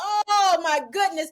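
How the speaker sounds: high, embarrassed outburst.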